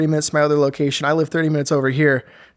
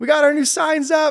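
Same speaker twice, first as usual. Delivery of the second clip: proud, high-pitched delivery. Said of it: "my memory on my phone of me, myself taking a video".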